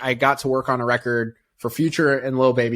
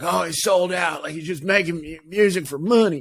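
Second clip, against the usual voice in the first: put-on North Carolina style southern accent; 4 semitones higher than usual. Imitating listeners hearing his music for the first time, in a put-on southern accent. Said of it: "I don't know why that was a southern accent".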